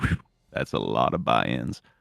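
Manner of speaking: very low mutter under the breath. Voicing a character looking at a vase: Dante muttering under breath. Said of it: "Dante under his breath just look at the vase and go".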